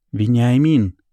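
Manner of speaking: loud snapped name, barked. A grandmother addresses her son, the narrator's father; barking. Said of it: "рявкает бабушка".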